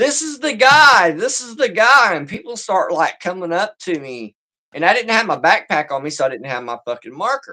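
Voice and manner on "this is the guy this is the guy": loud, high, drawn-out, far-carrying holler. Retelling how she suddenly started hollering to people: retelling someone hollering. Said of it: "she starts hollering".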